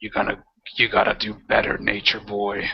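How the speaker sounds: deep, low monster creature voice. Voicing the creature in a game as it addresses a player: deep voice. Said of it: "the thing just looks at you in his deep voice".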